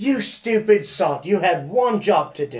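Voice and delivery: slow, put-on British accent, a best attempt. Quoting a movie line about having one job: imitating a british accent. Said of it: "That was your best British accent".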